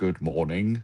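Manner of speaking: put-on British accent. Retelling how he greeted them in the hotel: imitating a British accent. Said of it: "talk in a British accent".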